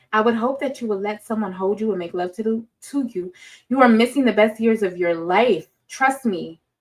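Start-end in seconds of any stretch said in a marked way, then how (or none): none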